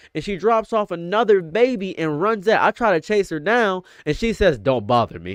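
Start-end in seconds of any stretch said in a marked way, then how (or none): 4.6-5.3 very low, very deep, darkest menacing voice. Retelling a woman from a massage parlor telling him off, imitating a very deep dark voice. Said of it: "In the deepest, darkest, blackest voice I've ever heard".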